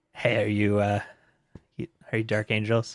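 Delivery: whispering. Voicing a dark figure who taps a player's shoulder: whispering in someone's ear. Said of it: "a whisper in your ear".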